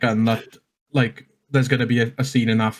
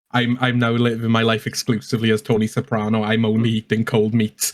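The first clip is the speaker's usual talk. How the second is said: ordinary talk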